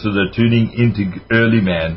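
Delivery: put-on Austrian accent. Quoting Arnold Schwarzenegger, in Arnold Schwarzenegger Austrian accent. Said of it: "as Arnold Schwarzenegger says, and I'll use my accent".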